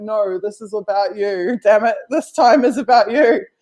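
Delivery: insistent yelling, pitched upward. Retelling an imagined argument, imitating herself yelling back. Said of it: "I'm yelling back".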